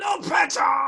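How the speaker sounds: high, loud, drawn-out shout.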